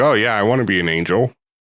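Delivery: dry, sarcastic, insincere tone. Describing what she said in a scene, the speaker quotes her, mock-sarcastic retelling. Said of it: "she's being sarcastic".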